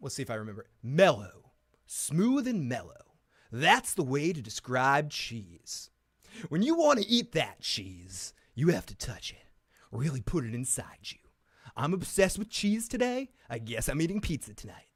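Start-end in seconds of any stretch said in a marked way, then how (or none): 0.8-10.8 broadcast-school radio commercial voiceover delivery. Speaker recreates the first voiceover they ever did, as a voiceover read. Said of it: "The first voiceover I ever did was".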